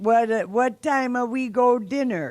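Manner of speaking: put-on halting, kinda broken Italian-accented English. Imitating the other speaker's dad's accented english: imitating broken accented english. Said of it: "speaking in this accented English".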